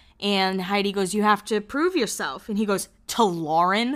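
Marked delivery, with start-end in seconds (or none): 3.1-4.0 put-on disgusted voice. Recapping a TV scene, retelling a man's reply to Heidi: mock-disgusted. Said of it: "Like all disgusted".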